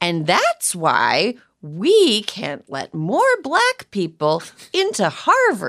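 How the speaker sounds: high, swooping, sing-song storybook voice. Mocking a broadcaster's delivery as like reading to a child: Tucker Carlson storybook voice. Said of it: "like the voice of a person reading a storybook to a child? It's like the intonation is like".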